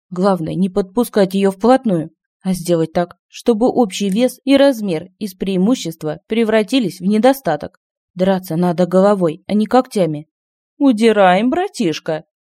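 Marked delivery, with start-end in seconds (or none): 10.7-12.2 mocking, teasing, derisive tone. His sister calls out to her brother Kiman during a race, mocking. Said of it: "услышал он насмешливый голос".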